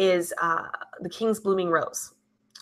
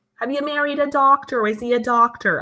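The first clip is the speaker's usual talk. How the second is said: put-on mother voice, pitched higher; 6 semitones higher than usual.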